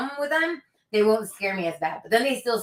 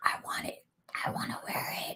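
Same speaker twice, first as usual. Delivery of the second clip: mock-creepy whisper, much quieter. Retelling what the scarecrow said to her, imitating a creepy whisper. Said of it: "he's whispering this like creepily".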